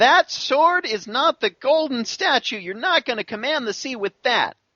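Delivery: chorus of squeaky animal voices.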